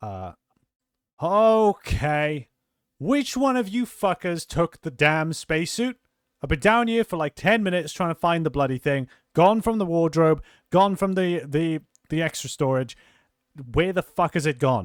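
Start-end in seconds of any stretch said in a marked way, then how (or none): 1.2-14.9 very loud, exasperated, frustrated angry yelling. The captain, unseen on the stairs, yells at the others, frustrated angry yelling. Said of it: "yell out in frustrated anger".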